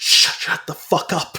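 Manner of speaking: imitated, terribly panicked man's voice. Retelling a movie scene, the speaker voices the man snapping at the woman: imitating a terribly panicked man. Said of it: "He's terribly panicked".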